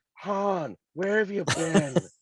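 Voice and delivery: gruff, high, drawn-out voice. Imitating Leia in her later years: Carrie Fisher's late voice. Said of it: "it sounded like that Carrie Fisher".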